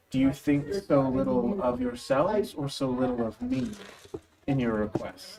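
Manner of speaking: soft half-whispering voice. Narrating for the players, the speaker voices a voice in their minds, half-whispering. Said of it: "a voice in the back of your mind whispering".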